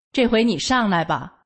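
usual speaking voice

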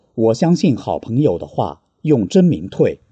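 ordinary talk

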